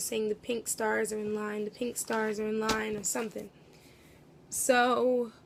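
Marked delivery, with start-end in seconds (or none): none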